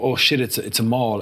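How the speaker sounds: ordinary delivery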